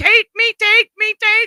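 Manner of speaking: acted-out, very high-pitched, repeated screaming. Telling a story, the speaker imitates a man screaming, retelling a scream. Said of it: "Or he was screaming".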